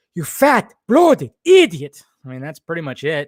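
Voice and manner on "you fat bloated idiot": shrill, high, slow, drawn-out cartoon voice. Asked about cartoon impressions, the speaker does one on the spot, Ren impression. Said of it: "Ren and Stimpy impressions?".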